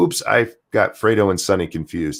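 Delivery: ordinary delivery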